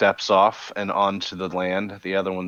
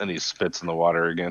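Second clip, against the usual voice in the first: ordinary delivery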